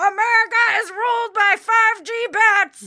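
high-pitched rant. Discussing credibility, the speaker slips into an Alex Jones voice. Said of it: "That's my impression of Alex Jones".

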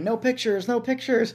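put-on high, loud shouted yell. Speaker retells a man on an elephant yelling at him, imitating a man yelling. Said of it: "he's like yelling at me".

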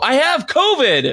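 put-on shrill, very high yell. Speaker retelling warning a woman walking toward the door, yelling out the window. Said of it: "I had to yell out the window".

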